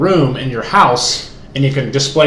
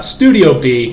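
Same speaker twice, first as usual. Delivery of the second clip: stressed B, drawn out slowly. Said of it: "emphasis on the B".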